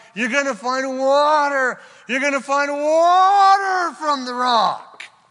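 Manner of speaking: fired-up, loud preaching shout, "water" drawn out. Speaking to listeners during a Bible teaching, shouting. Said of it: "Sorry for the shouting".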